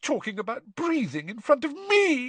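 shrill, very high-pitched voice with rising pitch. Narrator voices her answer to a bewildered boy, shrill. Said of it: "she said shrilly".

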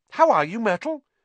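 falsely cheerful, very high, loud voice. Narrator voicing a girl greeting a sulky girl who has glided over, in a falsely bright voice. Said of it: "said Hermione in a falsely bright voice".

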